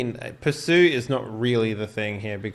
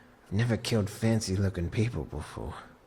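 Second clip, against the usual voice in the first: low, quiet muttering under breath to oneself; 4 semitones lower, 7 dB quieter than usual. In-character aside that Edgar may overhear: said quietly to oneself. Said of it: "I just sort of quietly say to myself".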